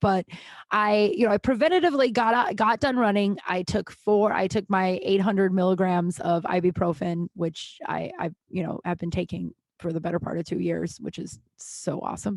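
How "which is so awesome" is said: hushed, whispered, breathy sardonic aside. Talking about taking ibuprofen for two years: sarcastic. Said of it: "I'm being sarcastic".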